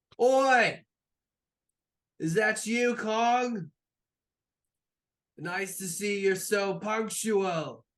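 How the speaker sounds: very high, loud, drawn-out hollered call. Voicing a boatman who calls to an arriving crew: yelling out. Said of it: "and yells out".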